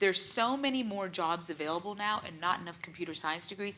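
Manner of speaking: plain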